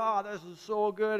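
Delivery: slow, groaning rave. Retelling a food show host tasting something, imitating moaning and groaning. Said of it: "he's just moaning and groaning".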